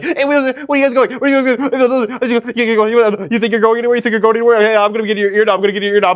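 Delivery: sped-up buzzing fly voice. Demonstrating the voice they imagine for a fly, sped-up fly voice. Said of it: "my voice, but really sped up".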